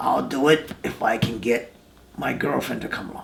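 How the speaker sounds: low, gravelly, rough voice. Retelling a partner's reply on the phone: Hawk's gravelly voice. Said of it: "his gravelly voice".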